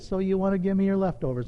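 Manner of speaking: put-on kind, loving voice. Retelling a conversation with God, imitating God speaking lovingly. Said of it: "so kind and loving the way he said it".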